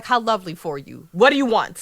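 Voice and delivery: put-on smug tone. Retelling what she said in reply; mock-smug. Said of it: "She's smug".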